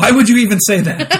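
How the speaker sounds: bone-dry, expressionless deadpan delivery. Telling a story, imitating the other guy's deadpan question to his companion. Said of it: "the other guy just deadpan".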